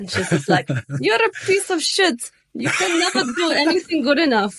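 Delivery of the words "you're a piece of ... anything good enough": clumsy put-on Russian accent, very high. Retelling what a Russian woman told them, in a bad Russian accent. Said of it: "I'm not very good with the Russian accent".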